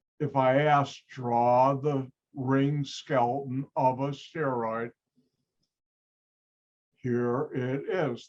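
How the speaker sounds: very slow, stretched, very drawn-out slow-motion delivery. The speaker repeats the instruction for listeners, saying it in slow motion. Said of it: "I'll say that in slow motion".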